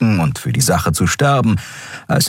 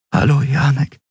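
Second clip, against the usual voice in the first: plain, simple voice, lifted higher; 5 semitones higher than usual. Narrator reads a woman greeting someone, saying it quietly. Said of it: "sagte sie leise".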